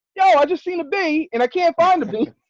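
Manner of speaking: high, loud, startled, excited yelling. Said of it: "I'm like".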